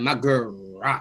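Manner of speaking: scornful, derisive mocking tone. Mocking another speaker's words back at them: mocking imitation of another speaker. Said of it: "Don't you ever in your life be like".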